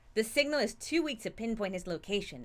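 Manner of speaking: normal talking voice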